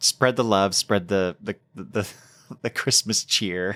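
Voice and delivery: laughing, giggling through the words. Thanking a co-host and wishing Christmas cheer: laughing while talking. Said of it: "I can't even say it with a straight face".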